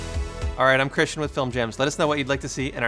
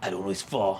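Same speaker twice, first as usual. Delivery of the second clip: put-on German accent, lower pitch and slower; 5 semitones lower than usual. Trying a voiceover take, in a put-on German accent. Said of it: "how's the German accent sound?".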